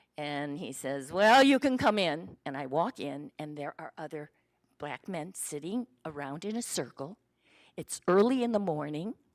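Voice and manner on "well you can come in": put-on gruff man's voice. Retelling what a man at a door said: imitating a gruff man. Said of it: "he sort of is very gruff".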